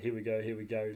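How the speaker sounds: eager, excited hushed half-whisper under the breath. Retelling how a hunting partner half-whispered as the stags moved: imitating an excited half-whisper. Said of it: "whispering to me".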